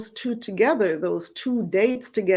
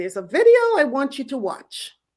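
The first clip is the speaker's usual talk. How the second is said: put-on British accent, higher; 5 semitones higher than usual. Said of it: "in her British accent".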